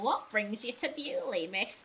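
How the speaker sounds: fairy-tale witch voice. Speaker repeats a woman's question back in a fairy-tale witch voice. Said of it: "She said that like a witch from a fairy tale".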